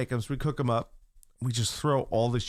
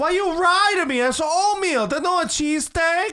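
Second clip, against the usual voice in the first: very high-pitched, shrill, loud mom voice; 6 dB louder than usual. Retelling his friend's mom coming downstairs, imitating his mom. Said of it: "I'm doing an impersonation of her".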